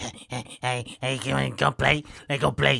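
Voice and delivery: slow, creaky, put-on small pug voice. Showing what someone's pugs might sound like, in an imagined pug voice. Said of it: "This is what I think Melissa's pugs sound like".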